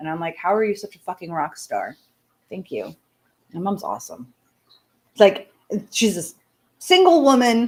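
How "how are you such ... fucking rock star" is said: ordinary delivery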